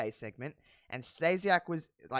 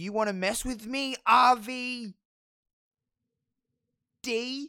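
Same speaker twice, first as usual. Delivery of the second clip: put-on sloppy slurring, words run together, high, slow; 8 semitones higher than usual. Retelling a wrestling promo in which Eddie yells at RVD: imitating Eddie Guerrero slurring. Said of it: "slurring his words".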